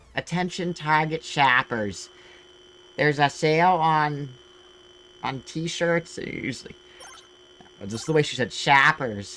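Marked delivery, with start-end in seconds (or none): 0.2-6.2 put-on Midwest announcer voice, much higher, louder, slower. Retelling a Target store intercom announcement in Michigan, with a really Midwest accent. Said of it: "had this like really Midwest accent".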